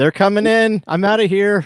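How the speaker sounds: yelling, very high pitch and very loud. A player's character starting up a chimney yells to the others: yelling. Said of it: "I yell".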